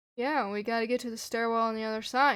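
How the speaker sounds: ordinary delivery, nothing marked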